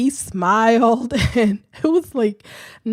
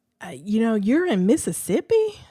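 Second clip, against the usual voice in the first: ordinary talk, nothing marked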